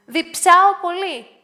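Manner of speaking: high, loud, abrupt, sudden blurt. Anna speaks up to the others: blurting out. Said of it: "πετάχτηκε η Άννα".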